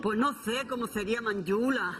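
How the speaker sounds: thick, closed, strong Andalusian accent. Wondering how Manjula would have spoken, in a strong Andalusian accent. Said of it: "ahora estoy haciendo un poquito de acento andaluz cerrado".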